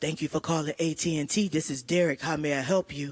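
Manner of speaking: very low, deep, seductive phone voice. Retelling how a customer service agent answered: imitating a sexy phone voice. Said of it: "answer the phone like this".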